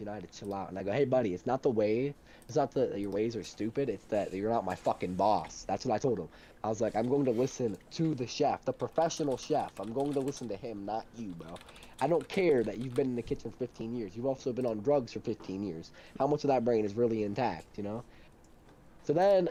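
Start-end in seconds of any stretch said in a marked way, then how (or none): none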